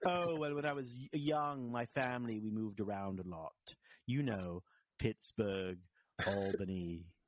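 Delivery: affected, put-on, fake English accent. Retelling a woman's answer when a man asks about her accent: English accent. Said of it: "a girl with the English accent".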